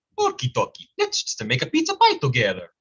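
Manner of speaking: impression of a video-game plumber character voice. Showing a voice done for years, Mario impression. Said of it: "I can do a Mario sometimes".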